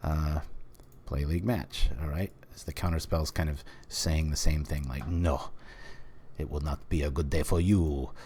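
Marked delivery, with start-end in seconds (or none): 5.1-8.1 put-on old French accent, slipped in. Commentating a card game, voicing what the counterspell says: old French accent. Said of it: "I slipped an old French accent there".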